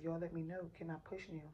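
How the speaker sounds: ordinary delivery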